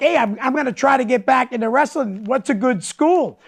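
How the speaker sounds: ordinary talk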